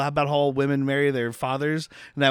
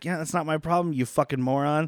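ordinary talk

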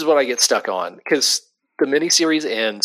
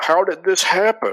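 high, mocking voice in a put-on editorial style; 8 semitones higher than usual. Showing how a magazine would react if you don't explain something, in a Wizard Magazine voice. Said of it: "that's your Wizard Magazine voice".

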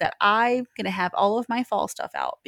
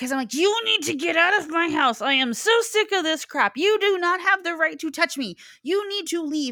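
put-on yelling, much higher; 8 semitones higher than usual. Retelling what the speaker yelled at the mirror, retelling yelling at the mirror. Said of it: "wondering why I'm yelling at".

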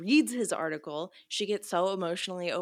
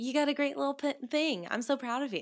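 high, condescending, patronizing play-acted tone; 7 semitones higher than usual. Retelling how a visiting reporter talked: imitating a condescending reporter. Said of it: "it was so condescending".

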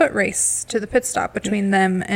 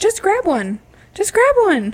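put-on very high, shrill, swooping yell; 11 semitones higher than usual. Retelling how a contestant urged her partner: imitating Nicole yelling. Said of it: "yelling at Brandon".

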